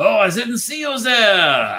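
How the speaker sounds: very high, loud, swooping cartoonish French accent. Mocking an actor's accent in The Walk, with a Pepe Le Pew accent. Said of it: "instead of a French accent, be Pepe Le Pew".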